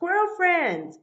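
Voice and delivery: loud, high, hollered calling-out shout. Explaining how the character calls out to his squirrel friends, shouting. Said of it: "He's kind of shouting".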